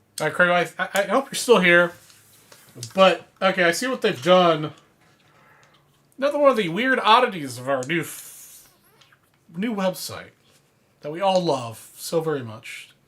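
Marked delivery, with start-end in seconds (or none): 6.2-12.9 heavy, pointed sarcasm with mock-loving tone. Complaining about an oddity of the new website: sarcastic. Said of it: "Hope you can understand the sarcasm".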